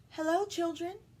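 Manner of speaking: sweet, high-pitched voice. Narrator reads a woman greeting the whispering children, in a sweet voice. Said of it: "said someone in a sweet voice".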